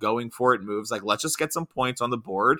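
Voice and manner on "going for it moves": ordinary talk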